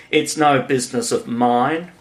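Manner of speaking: ordinary delivery, nothing marked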